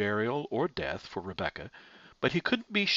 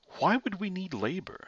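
suspicious, wary, doubting, pitched-up tone; 7 semitones higher than usual. Reading fiction, Gerard questions Pierre, suspicious. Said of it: "Asked Gerard suspiciously".

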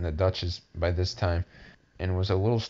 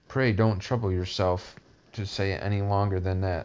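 usual speaking voice

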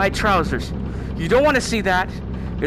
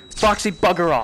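furious and frightened at once, outburst. Streaming a game, telling Foxy to go away: angry and scared. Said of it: "I'm angry and scared right now".

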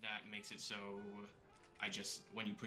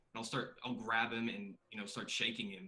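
ordinary talk, nothing marked

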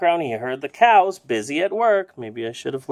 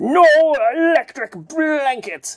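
put-on creaky old farmer voice, very high pitched; 10 semitones higher, 4 dB louder than usual. Narrating a story, speaking as the character Farmer Brown: old Farmer Brown voice. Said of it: "I guess he's an old guy".

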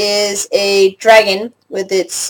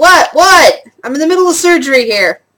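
woman's voice yelling, much higher; 6 semitones higher, 3 dB louder than usual. Someone knocks on the door and a woman yells back from inside. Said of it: "You hear a woman's voice yell back".

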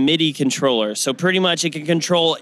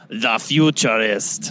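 put-on Austrian German accent, lower pitch; 5 semitones lower than usual. Asked by another speaker to say a product name: Arnold Schwarzenegger voice. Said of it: "I want that again. One more time".

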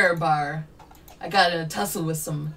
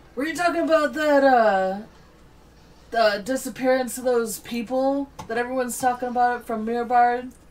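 put-on drunk voice, pitched higher; 7 semitones higher than usual. Voicing a stranger who clamps a hand on your shoulder, drunk voice. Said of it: "I can't do a drunk voice very well".

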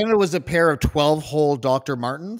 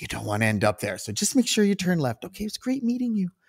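put-on kindly, gentle, soft, sweet old-lady voice; 4 semitones higher, 5 dB quieter than usual. Retelling what a small old lady said while giving directions: imitating a sweet old lady. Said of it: "sweet, sweet, sweet".

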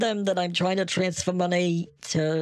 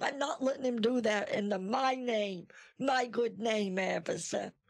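put-on willful elderly woman voice, much higher, quieter; 4 semitones higher, 7 dB quieter than usual. Addressing an officer about a man using her name, willful 80-year-old woman voice. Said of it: "but making him believe that I really am just a willful 80-year-old woman who's going to take matters into her own hands".

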